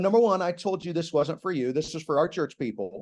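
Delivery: ordinary talk, nothing marked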